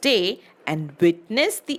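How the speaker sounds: ordinary delivery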